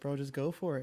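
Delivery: ordinary delivery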